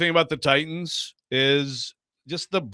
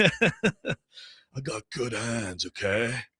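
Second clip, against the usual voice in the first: quieter stoner surfer dude voice; 4 semitones lower, 5 dB quieter than usual. Imagining for the others how Wasserman would talk, in a Spicoli voice. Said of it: "Will Spicoli".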